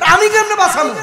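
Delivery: exasperated exclamation, high and loud.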